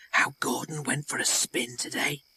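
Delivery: soft hissing whisper from close by. Narrator reading a voice whispering close by at night: hissing whisper. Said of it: "it hissed".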